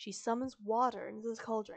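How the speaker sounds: ordinary delivery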